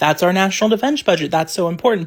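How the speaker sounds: ordinary talk, nothing marked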